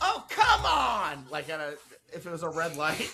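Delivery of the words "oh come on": mock very high, loud, annoyed toddler cry. Retelling how a three-year-old daughter reacts at red lights: imitating a toddler's road-rage outburst. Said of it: "my three-year-old sweetheart, Mila ... would go".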